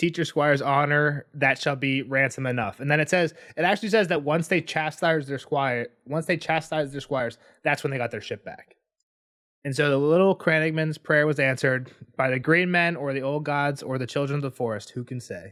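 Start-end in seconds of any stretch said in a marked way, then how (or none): none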